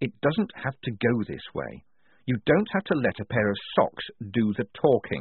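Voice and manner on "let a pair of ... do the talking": ordinary delivery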